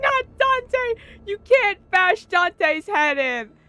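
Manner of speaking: high, drawn-out, stretched-out screaming cry. Retelling what a game character shouts about Dante: imitating a character screaming. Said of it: "screaming her head off".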